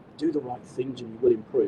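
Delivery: plain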